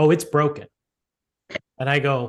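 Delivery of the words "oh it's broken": put-on deadpan, dead serious delivery. Retelling a worker's reply about the broken elevator: imitating someone dead serious. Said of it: "dead serious".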